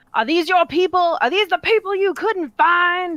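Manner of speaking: very high, very loud accusing scream. Voicing a character dragging a shocked man to wreckage: screaming at him. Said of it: "she just starts screaming at him".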